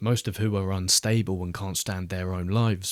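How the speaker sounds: plain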